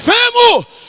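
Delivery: high, loud, prophet-like shout. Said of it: "começa a gritar no meio dos cacos".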